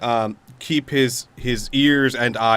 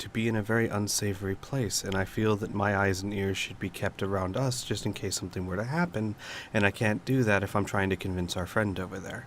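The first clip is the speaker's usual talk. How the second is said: soft, brought-down voice; 2 semitones lower, 10 dB quieter than usual. Playing a character, speaker urges a companion to convince their friend; lowered voice. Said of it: "and he's going to lower his voice".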